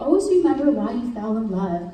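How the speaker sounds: ordinary delivery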